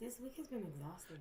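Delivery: very quiet half-whisper. Answering a question about their week: half-whispering. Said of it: "don't whisper now".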